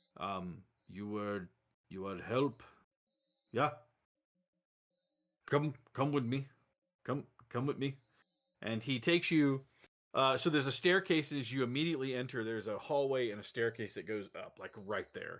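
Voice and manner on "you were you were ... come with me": choppy, halting broken English phrasing. Game master voicing a man who ushers the players inside, in broken English. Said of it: "He's saying this in like a broken English".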